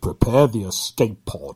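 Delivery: deep, slow, breathy, heavy villain voice. Showing how to do a Darth Vader impression with a throwaway line: Darth Vader impression. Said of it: "When you do a Darth Vader impression".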